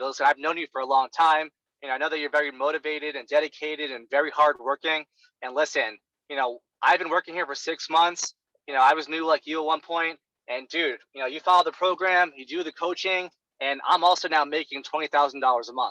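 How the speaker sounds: ordinary talk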